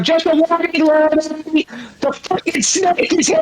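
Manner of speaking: high-pitched yelling in a character voice. Recounting a voice actor shouting in character to a fellow actor, retelling a yell down the row. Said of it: "yelled down the row and said".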